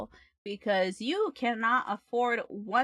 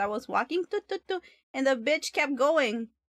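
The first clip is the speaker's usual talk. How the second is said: usual speaking voice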